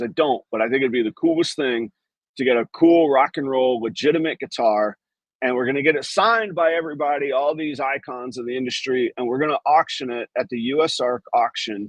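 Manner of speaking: ordinary talk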